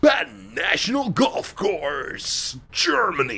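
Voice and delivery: put-on booming movie-trailer announcer voice. Imitating a golf game's male announcer, booming trailer-style announcer. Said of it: "The male announcer is clearly going for the guy who used to do the "In the, in a world,"".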